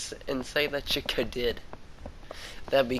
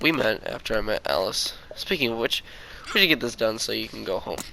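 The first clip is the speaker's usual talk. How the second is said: ordinary delivery, nothing marked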